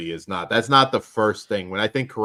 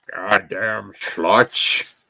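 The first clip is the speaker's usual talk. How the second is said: voice made to sound meaner. Imagining another actor in a film role, the speaker tries a mock-mean Jeff Bridges impression. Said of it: "He probably would have been a little meaner".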